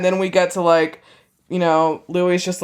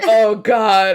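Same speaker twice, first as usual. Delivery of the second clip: put-on whining voice, higher pitch; 5 semitones higher, 3 dB louder than usual. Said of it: "he's still whining".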